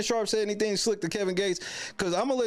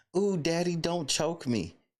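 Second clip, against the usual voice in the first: put-on sensuous, seductive bedroom voice; 3 semitones lower than usual. Speaker mocking how a woman said she didn't want to be choked, mock-sensuous voice. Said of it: "Does that sound like she was being sensuous?".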